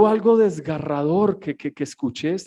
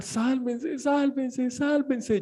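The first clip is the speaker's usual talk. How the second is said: put-on high, tearful shout through crying; 7 semitones higher, 8 dB quieter than usual. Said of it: "Y ella gritaba".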